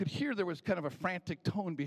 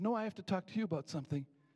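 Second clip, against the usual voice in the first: higher, eager, chirpy waitress voice. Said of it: "the waitress said".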